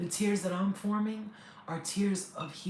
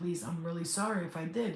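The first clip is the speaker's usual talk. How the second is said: plain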